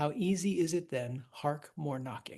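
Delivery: normal talking voice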